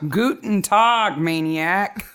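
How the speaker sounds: put-on German Southern accent. Podcast hosts greeting their listeners, one in a put-on german southern accent. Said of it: "My German Southern accent".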